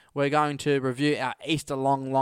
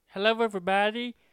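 put-on frog puppet character voice; 7 semitones higher than usual. Greeting listeners while doing voices on request, in a Kermit the Frog voice. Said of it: "Kermit the Frog here".

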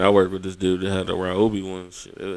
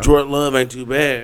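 loud, pitched-up, insistent hollered yell; 6 semitones higher, 6 dB louder than usual. Repeating a point to someone who said they can't hear; yelling. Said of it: "Why are you yelling?".

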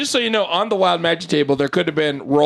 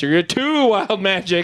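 ordinary talk

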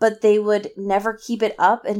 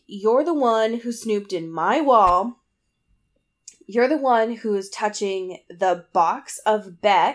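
ordinary talk, nothing marked

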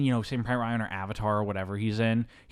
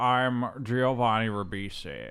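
odd, warped, offbeat, accentless put-on voice. Describing an actor's strange voice in a role: imitating Giovanni Ribisi's voice. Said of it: "He's just talking like this".

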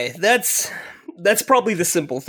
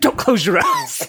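put-on old man yelling, higher; 8 semitones higher, 3 dB louder than usual. Retelling a grandfather at the shooting range: imitating a grandfather yelling. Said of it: "a grandfather yelling at you".

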